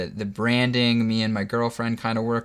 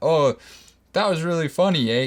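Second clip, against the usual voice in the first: put-on pitched-up Canadian accent, tagging on eh; 5 semitones higher than usual. Retelling his reaction after watching the video, canadian accent. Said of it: "he's got a, a, a Canadian accent".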